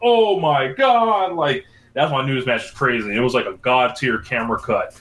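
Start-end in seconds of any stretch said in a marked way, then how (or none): 0.0-1.3 play-acted very high, stunned, astonished shout. Retelling yelling at the TV during a crazy match: imitating own yell. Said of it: "I fucking yelled at the T V".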